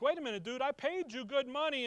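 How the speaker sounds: mock irritation, getting mad. Retelling a complaint from someone who paid good money: imitating someone getting mad. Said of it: "Balak's getting mad. He's like".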